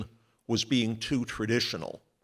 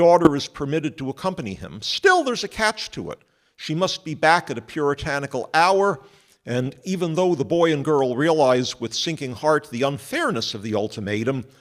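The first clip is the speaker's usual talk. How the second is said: plain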